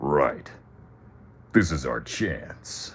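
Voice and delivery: very slow, super macho, gruff tough-guy delivery. Speaker shows how the character should have sounded: super macho, super gruff. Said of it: "Super macho, super gruff".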